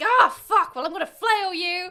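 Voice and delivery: put-on loud, high drunken outburst.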